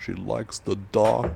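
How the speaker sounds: very loud, booming, slow, rough, drawn-out gothic vampire voice. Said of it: "the [name] inhale".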